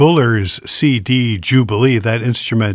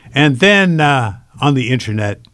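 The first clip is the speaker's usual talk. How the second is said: ordinary delivery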